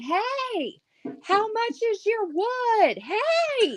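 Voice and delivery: very high holler, "hey" stretched long. Retelling how a friend called out to a passing truck: imitating Krista yelling. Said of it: "she's yelling".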